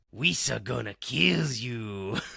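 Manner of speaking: put-on evil creature voice. Joking about being Sith Jar Jar: evil Jar Jar Binks voice. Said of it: "I'm trying to do evil Jar Jar".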